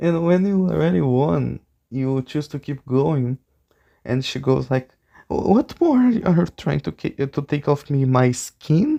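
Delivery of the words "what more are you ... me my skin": voice gone desperate and pleading. Describing the card mini-game after already winning: imitating Lorena's desperation. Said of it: "She starts to get desperate".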